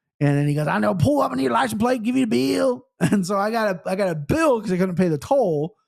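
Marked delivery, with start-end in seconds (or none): 0.7-2.9 put-on heavy backwoods country accent, laid on, high and thick. Retelling what a guy at the toll said, in a thick country accent. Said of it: "The most country back ass accent".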